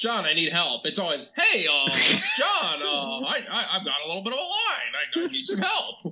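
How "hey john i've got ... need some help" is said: cartoon rooster voice, much higher, slower. Imitating a coworker asking John for help, Looney Tunes rooster voice. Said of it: "make him sound like he's that Looney Tunes rooster".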